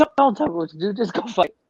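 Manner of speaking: curt, sharp, scolding tone. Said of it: "And he was like".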